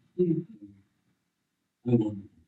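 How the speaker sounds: put-on mild, soft, gentle, polite English accent. Retelling a scene where he reaches the gentleman at the front, in a gentle English voice. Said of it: "in a very gentle English voice".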